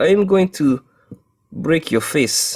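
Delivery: bad, clumsy Russian accent with a menacing tone. Describing a gangster watch, voicing a mafia enforcer, in a bad Russian accent as Serlov. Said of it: "why can't I do any accents right now?".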